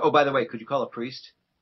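normal talking voice

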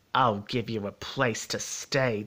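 growling, snarling delivery. Narrator voices the beast answering the stammering visitor, snarled. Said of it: "the beast snarled".

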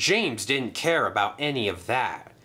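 ordinary delivery

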